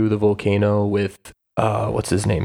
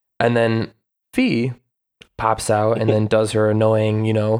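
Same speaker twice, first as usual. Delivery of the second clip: plain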